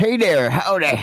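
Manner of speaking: put-on American accent, southern American style. Greeting someone who just logged in, put-on American accent. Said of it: "this is my American voice".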